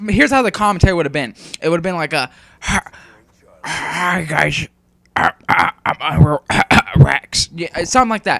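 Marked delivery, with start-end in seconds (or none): 2.6-7.5 very slow, rough, raspy voice. Showing how their commentary would have sounded with a sore throat, sounding like a smoker. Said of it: "because I sounded like a smoker".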